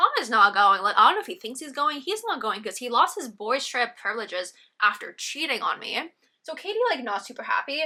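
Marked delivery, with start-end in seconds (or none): none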